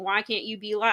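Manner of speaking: put-on mocking tone. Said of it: "keeps mocking them".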